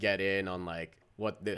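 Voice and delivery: normal talking voice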